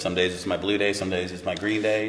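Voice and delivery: ordinary talk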